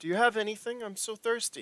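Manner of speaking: put-on tiny little girl voice, pitched very high. Voicing a little girl asking another stranger for a drink: little girl voice. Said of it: "she's a little girl, like, at four".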